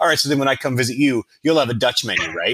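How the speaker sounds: acted, fast, quick-witted, snappy delivery. Retelling how the waiter answered a request for an English menu, retelling a waiter's snappy comeback. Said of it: "And he just snaps".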